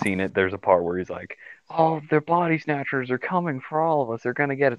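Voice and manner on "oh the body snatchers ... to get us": high, frantic, panicked, freaking-out yell. Retelling a movie scene where a character yells on a highway: imitating someone freaking out yelling. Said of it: "he's just freaking out".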